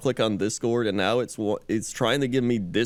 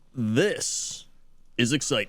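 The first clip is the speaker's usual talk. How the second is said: mock retro commercial announcer voice. Podcast host opening the episode, like an old video game ad announcer. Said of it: "You sounded like an advertisement for like an old video game system".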